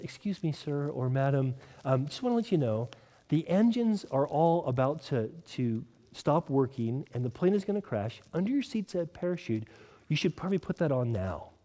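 very quiet, hushed, discreet, confidential tone. Storyteller voicing a stewardess squatting down beside a passenger, speaking very quietly. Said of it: "very quietly says".

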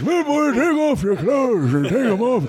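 put-on old man voice. Retelling a heckle from the crowd, delivered in an old man voice. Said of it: "That's my old guy voice".

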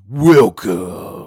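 very loud, high-pitched, belted fighter voice. Trying a movie character's one-word line after a demonstration: Scorpion voice. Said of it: "I sound like a porno actor".

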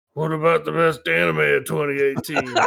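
put-on disgruntled voice. Reading a listener's message aloud: engaged, disgruntled Bill voice. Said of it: "Engaged, disgruntled Bill voice".

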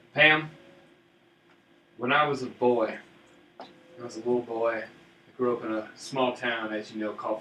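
put-on charming Southern American accent. Going up to Pam and breaking out the Southern charm accent. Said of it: "I gotta break out the Southern Charm".

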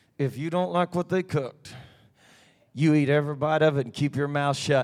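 low mutter through clenched teeth, lips still. Recalling a warning given under the voice before walking in, through clenched teeth. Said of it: "kind of under the voice. The lips never moved, and it was all through the teeth".

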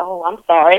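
ordinary talk, nothing marked

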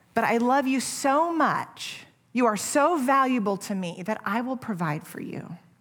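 put-on loving, gentle voice. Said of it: "Lovingly and gently".

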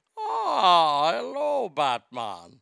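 creepy, swooping, drawn-out delivery, stretched "ah". Doing an impression of Bane that sounds creepy: creepy Bane voice. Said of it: "Bane sounds like the world's creepiest pedophile".

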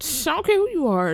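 high, fast, defiant tone.

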